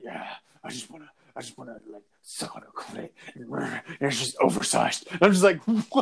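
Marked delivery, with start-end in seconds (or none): 0.6-5.2 put-on creepy, pervy-sounding voice. Quoting a man's words in his pervy voice: creepy pervy voice. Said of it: "in his pervy voice".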